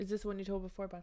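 whispering. Asking the other speaker whether they told this story before: whispering. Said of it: "Why am I whispering?".

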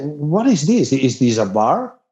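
ordinary talk, nothing marked

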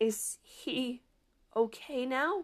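strangled, choked, soft, very slow voice. A student in detention asks whether a classmate is okay, in a strangled voice. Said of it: "Addie asks in a strangled voice".

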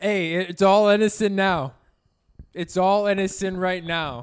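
loud, shouting, yelling voice. Answering a laughing listener's question about smoking, yelling. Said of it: "Why are you yelling?".

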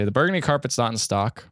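ordinary talk

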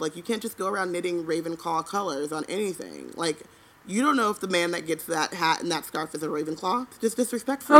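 ordinary delivery

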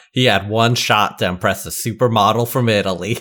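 ordinary delivery

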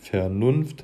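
Vernunft with overstressed second syllable -nunft. Explaining the iambus with an example word: exaggerated stress on nunft in vernunft. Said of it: "wenn man das jetzt übertrieben ausspricht, würde man ja sagen Vernunft. Also am Anfang die unbetonte Silbe und am Ende dann".

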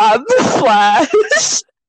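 put-on, mild, half-hearted yelled scream. Retelling a show scene where the character shouts: imitating Barry screaming. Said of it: "Barry's over there screaming".

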